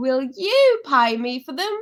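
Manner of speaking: loud, high-pitched Cockney accent. Reading a girl's line from a text aloud, in a Cockney accent. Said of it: "That's back to Cockney".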